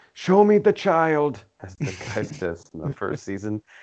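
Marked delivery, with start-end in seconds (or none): 0.2-1.5 put-on German accent, pitched up. Discussing an episode, the speaker quotes a first-season line in a super german guy voice. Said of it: "That's supposed to be super German guy".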